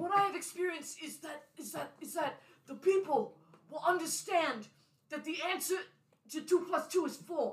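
put-on high-pitched old man voice. Playing six-year-old Bernie answering someone who says he is only six, Bernie's old man voice. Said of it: "He still had an old man voice".

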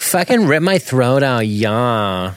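put-on slow, eager goth groupie girl, stretched-out yeah. Playing a goth groupie girl who begs to be killed: goth groupie girl character voice. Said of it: "goth groupie girl who wants to basically be killed".

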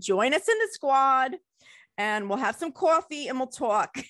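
put-on New Jersey accent. Host closing the show, inviting listeners to join, in a New Jersey accent. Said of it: "I'm giving you my like New Jersey accent".

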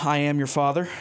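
ordinary delivery

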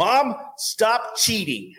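high, loud, slow scolding with laughter. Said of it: "and he goes".

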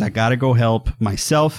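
ordinary talk, nothing marked

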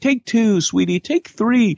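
high, sugary sweet voice. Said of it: "they're like".

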